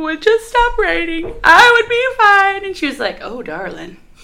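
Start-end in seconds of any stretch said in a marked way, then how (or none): 0.0-2.6 tearful sobbing, very high-pitched and raised. Telling of answering her ob at a six-week appointment, retelling crying. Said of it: "And I just cried".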